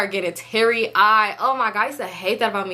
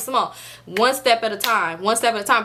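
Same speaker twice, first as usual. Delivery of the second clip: ordinary talk, nothing marked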